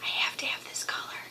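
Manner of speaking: soft whisper.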